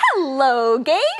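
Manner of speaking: pleasant, easy, friendly tone. Demonstrating different ways of saying hello to someone: friendly. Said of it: "say hello in a friendly way".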